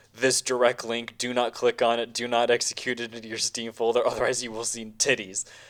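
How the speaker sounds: tongue-in-cheek, sarcastic, knowing tone. Quoting community pages warning against a patch: imitating a sarcastic warning. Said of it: "It's like being very sarcastic about".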